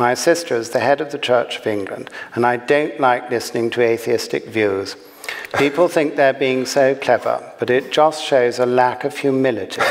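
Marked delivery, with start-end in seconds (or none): none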